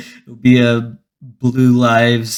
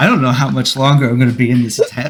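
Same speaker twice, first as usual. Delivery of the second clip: plain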